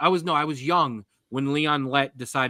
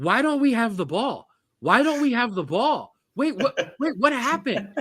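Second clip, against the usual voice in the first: put-on, very high-pitched yelling; 9 semitones higher than usual. Retelling watching a game and not hearing it: retelling yelling at the tv. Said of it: "I am just yelling at the T V".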